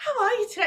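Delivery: acted, cheery, bubbly, high-pitched voice. Retelling what a drive-thru worker said: imitating a bubbly greeting. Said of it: "It was so bubbly".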